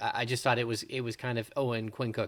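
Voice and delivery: ordinary talk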